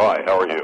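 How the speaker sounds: deep put-on man's voice.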